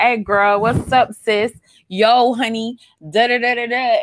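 drawn-out, exaggerated, slangy street delivery.

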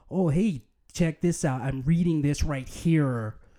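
bland, generic, put-on American accent. Mocking Australian actors cast as Americans, doing a generic American voice. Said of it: "it's generic American voice".

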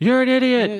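mock, very high, full-throated holler. Retelling a scene where the Grinch yells alone in his house: imitating the Grinch yelling. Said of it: "yelling, and it keeps echoing".

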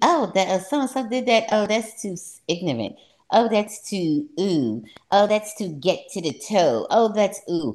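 snooty, disdainful snobbish tone. Imitating the other speaker's attitude toward others: mocking an elitist attitude. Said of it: "what you act like you're so elitist about".

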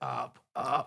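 real dirty, grimy-sounding voice. Retelling a voice heard while being lifted above the bed: imitating a grimy voice. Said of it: "like a real grimy voice".

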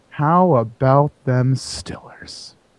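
very slow, oddly soothing, weirdly calm voice. Retelling how a man walked in and greeted the class: imitating a weird calming voice. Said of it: "like weird calming voice".

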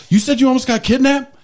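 mock outraged, very high, angry voice. Retelling how the wife questioned a girl at the porch: imitating angry wife. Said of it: "my wife is pissed".

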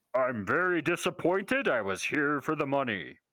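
big booming character voice. Voicing the character Riddle Thick Yam in a group scene: Riddle Thick Yam booming voice. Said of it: "in his booming voice".

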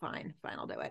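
put-on hushed, grudging, reluctant whisper. Retelling a character finally agreeing to investigate: imitating reluctant agreement. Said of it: "very reluctantly agrees".

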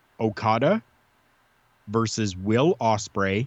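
very slow, deliberate, each word spaced out. Recommending a wrestling match to fans, the speaker names it slowly enough for them. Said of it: "I'll say it slow enough here for you".

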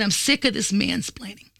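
normal talking voice

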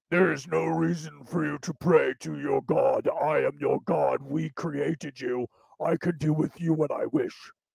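rough, rattling, gruff, deep alien voice. Acting out what he says, imitating his gruff, deep voice. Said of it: "He's got a very gruff, deep voice".

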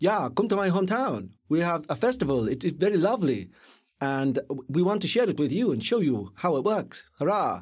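fake Swedish accent throughout. Retelling a film, voicing a guy inviting friends to his hometown festival: put-on swedish accent. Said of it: "I'm gonna do an accent here".

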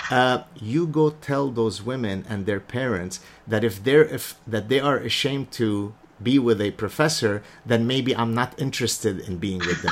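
ordinary delivery

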